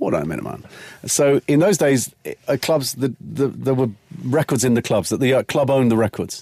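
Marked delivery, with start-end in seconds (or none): 0.0-0.6 put-on chilled, smooth, easygoing voice. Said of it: "he's so chilled".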